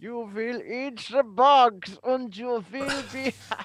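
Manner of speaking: very loud, booming, commanding tone at full volume. Showing another impression for the other speaker: Klaus Schwab impression. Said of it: "I have my Klaus Schwab".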